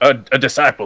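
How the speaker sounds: shouting. Answering a voice from a magic storm in character: shouting. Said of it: "I shout out".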